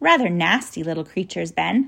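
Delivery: plain reading voice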